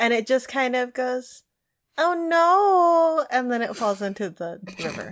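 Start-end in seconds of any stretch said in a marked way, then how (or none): 2.0-3.2 weird, high tentacle-creature voice, stretched no. Voicing a talking tentacle as it is punched: weird tentacle voice. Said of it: "these voices are weird".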